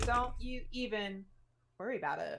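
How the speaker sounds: very sassy, sharp delivery. Retelling own reply to a spellcaster: sassy. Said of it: "I got real sassy and I said".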